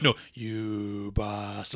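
long stretched-out delivery. Acting out the reanimated head's line from Re-Animator, very drawn out. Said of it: "Like, very drawn out".

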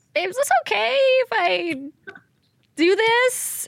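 very high, put-on baby voice. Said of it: "She wanted it in the baby voice".

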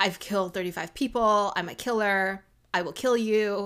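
eerie, creepy, porcelain-doll-like voice. Retelling how a girl in a story starts a fight: imitating a creepy doll-like voice. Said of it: "creepy doll-like way where she's like".

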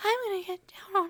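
very high, fast mock whisper voice. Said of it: "you mean whisper voice?".

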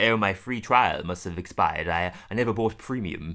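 put-on British accent. Retelling a scene, quoting the male character who is British: imitating a British accent. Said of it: "the male one is British".

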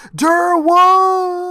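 put-on very high, drawn-out, alarmed yell. Recounting how an act ends before a commercial break: yelling Durwood. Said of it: "Bromley yelling".

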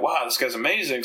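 plain

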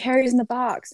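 high, loud, shrieking scream. Retelling what a fan next to them at the concert said: imitating a fan screaming. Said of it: "she was screaming".

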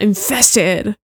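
Infested punched with heavy emphasis. Listing upcoming events and naming the next one, emphasis on Infested. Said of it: "I have to kind of put some emphasis".

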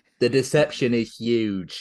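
very slow, drawn-out delivery, every word stretched. Joking that a country is fake news, Trump impression. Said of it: "that was my best Trump".

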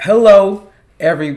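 booming, very loud, high, full-volume voice. Podcast co-host starting to greet listeners, speaking too loud. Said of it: "am I being too loud again?".

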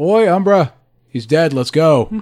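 calling out from a distance. A character calls from the woods to a party member in a raised voice, calling out. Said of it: "He just raises his voice from the woods and goes".

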